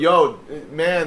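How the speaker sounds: ordinary delivery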